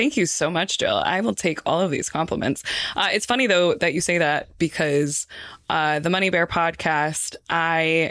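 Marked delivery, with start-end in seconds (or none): none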